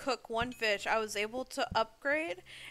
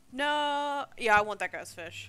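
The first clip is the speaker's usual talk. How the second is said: ordinary delivery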